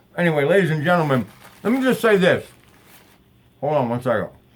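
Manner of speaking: talking with mouth full, chewing. Host eating on his show talks with his mouth full. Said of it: "never speak with your mouth full".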